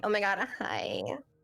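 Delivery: put-on beachy Californian valley girl accent with vocal fry. Explaining the accent that slipped out, showing it off: valley beach Californian accent, vocal fry. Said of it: "valley beach Californian accent. The vocal fry".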